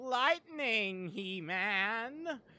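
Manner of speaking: put-on high cartoon villain voice, name drawn out. Imitating how another player says lightning, like Skeletor: imitating a Skeletor voice. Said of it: "that's what she sounds like when she says lightning".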